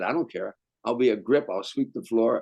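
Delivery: ordinary talk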